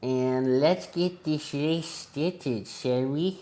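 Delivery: creepy, somewhat eerie put-on voice. Finishing the qualifying results before starting a race, a creepy voice. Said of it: "that was kind of a creepy voice I just did".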